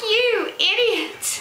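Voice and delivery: put-on faded British accent at a very high pitch. Retelling mom's reaction to a wrong card in a game, in her faded British accent. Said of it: "in her like fairly leftover British accent".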